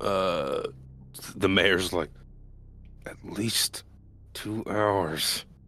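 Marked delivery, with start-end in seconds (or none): 3.1-5.4 very quiet, hushed, under the breath. Narrating a tabletop game, voicing the mayor's answer very quietly. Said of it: "she says very quietly".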